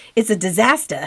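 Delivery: put-on Boston accent. Speaker describing a messy place and quoting John, imitating John's Boston accent. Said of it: "As John says in his Boston accent".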